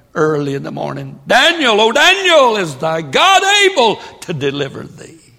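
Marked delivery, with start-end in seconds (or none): 1.2-5.1 loud, raised, high, swooping royal-sounding shout. Retelling the king calling to Daniel in the morning: imitating a king yelling. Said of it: "The king come yelling".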